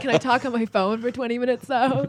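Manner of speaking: put-on exasperated teen voice. Retelling own replies to dad at home: imitating own eye-rolling teenage self. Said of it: "eye rolling".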